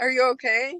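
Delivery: put-on calm tone. Retelling a friend, just stitched up, asking after the speaker: imitating someone asking calmly. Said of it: "Very calmly".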